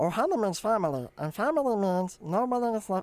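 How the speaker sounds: dead-on, closely copied cartoon character voice. Doing cartoon voices to show they aren't hard: Stitch voice. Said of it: "you sound just like him".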